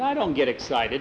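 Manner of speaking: ordinary delivery, nothing marked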